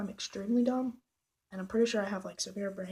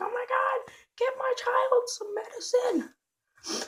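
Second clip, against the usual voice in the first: mock frantic cry, very high, slow, drawn out; 4 dB louder than usual. Retelling how the speaker's mom reacted to the pain, imitating mom's panic. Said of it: "she's like panicking".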